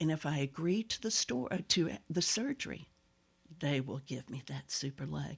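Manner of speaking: leaning-in, confidential, conspiratorial tone. Retelling what they tell the kindergarten class: retelling a conspiratorial aside. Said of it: "I lean in and say".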